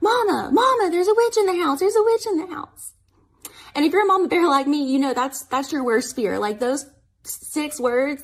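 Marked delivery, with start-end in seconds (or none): 0.0-2.9 put-on, high-pitched children's shrieking screams. A mother retells her kids calling to her from the living room, imitating kids screaming. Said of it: "I hear them screaming".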